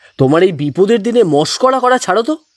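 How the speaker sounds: angrily. Rudranath laughs loudly; the narrator answers him, angrily. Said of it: "আমাকে এইভাবে রেগে যেতে দেখে".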